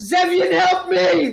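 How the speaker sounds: very high, frantic, desperate scream. Narrating a character who shoots flame and cries to an ally, screaming out. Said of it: "shoots and screams out".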